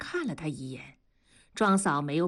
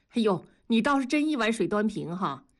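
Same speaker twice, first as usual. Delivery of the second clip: plain reading voice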